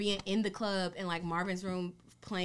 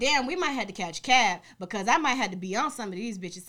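plain

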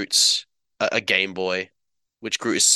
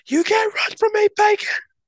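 mock, very high, shrill scream from afar; 5 dB louder than usual. Retelling a story where a fleeing man is chased, imitating Nebula screaming. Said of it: "Nebula in the distance scream out".

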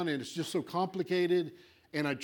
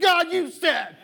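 screaming at full volume, very high-pitched; 11 semitones higher, 9 dB louder than usual. Acting out a prayer after no breakthrough comes: imitating someone screaming. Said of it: "you start screaming".

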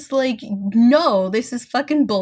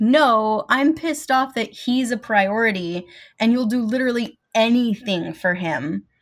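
usual speaking voice

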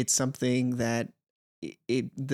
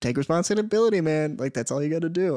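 friendly, buddy-like voice; 4 semitones higher, 4 dB louder than usual. Retelling the little voice in one's head giving advice: imitating Hyland's voice. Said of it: "which is now just Hyland's voice going like".

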